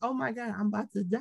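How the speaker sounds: put-on pained voice. Describing sitting there in pain during sex, acting out being in pain. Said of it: "sitting there in pain like".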